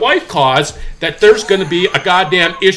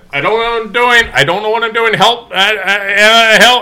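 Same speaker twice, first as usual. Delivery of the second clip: acted-out full-volume child shouting, "I" stretched; 4 semitones higher than usual. Retelling what a kid coming out of an office said: imitating a kid shouting. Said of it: "here is about the level, seriously, that he was shouting".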